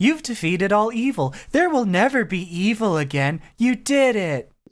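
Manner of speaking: mock patronizing, condescending, talking-down tone. Describing a dub scene, quoting her line to him in a mock-condescending tone. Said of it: "they gave her this like condescending fucking tone of".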